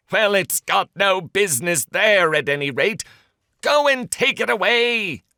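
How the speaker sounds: irritable, angry, high-pitched delivery. Narrating the story, the rabbit answers the other voice at the window: angry. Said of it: "said the rabbit angrily".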